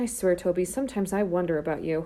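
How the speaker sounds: usual speaking voice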